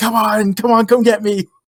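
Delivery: very high, shrill scream at top of lungs. Recounting a man in an episode yelling at demons, retelling a scream at demons. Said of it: "Like screaming at the top of his lungs".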